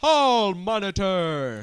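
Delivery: booming superhero voice. Retelling a cartoon scene where a character says his title: superhero voice. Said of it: "it's like a superhero voice".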